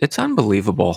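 imitated quiet, soft-spoken voice. Quoting something his wife said the other day, retelling her quiet remark. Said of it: "My wife just quietly said".

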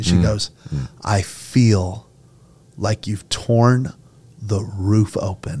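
very slow, choked-up, halting, voice breaking mid-phrase. Sharing a message someone's wife sent, choked up. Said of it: "Now I'm getting choked up".

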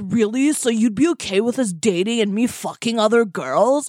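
put-on surfer-dude voice. Retelling a man's reply in a story about dating, surfer voice. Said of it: "I don't know why he sounds like a surfer".

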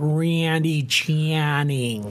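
Lake Erie accent laid on thick. Demonstrating a regional accent, the speaker talks in a heavy Lake Erie accent. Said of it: "If you had the serious Lake Erie accent".

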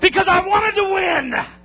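high-pitched, loud, angry yell.

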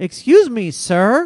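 very loud, deliberately emphatic, carrying voice. Recounting a man with a bicycle passing by, the speaker repeats his remark very loudly. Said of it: "he said it very, very loudly".

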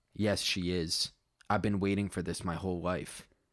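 plain reading voice

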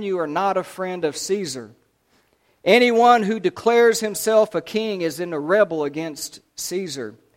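ordinary delivery, nothing marked

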